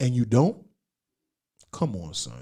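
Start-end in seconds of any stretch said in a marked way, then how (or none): 1.7-2.4 very quiet, hushed, soft put-on voice. Scolding someone who stayed in Chicago: Ed Lover voice. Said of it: "In my Ed Lover voice".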